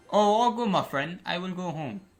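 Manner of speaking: poor put-on Indian accent. Retelling what he said to a man who didn't order the pizza, in a put-on indian accent. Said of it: "I just go in my Indian accent again".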